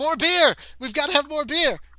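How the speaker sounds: shrill, very high, booming, loud panicked yell. Voicing a panicking guest at the inn: panicking tavern patron. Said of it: "a few people are panicking".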